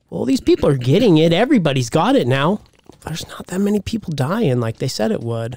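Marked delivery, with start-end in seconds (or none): none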